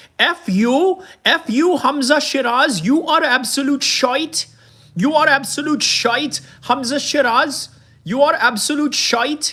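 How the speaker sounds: put-on Indian and Scouse mixed accent. Acting out an online insult posted about a rival, in a put-on Indian-Scouser accent. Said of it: "I'm trying to do an Indian slash, Scouser accent".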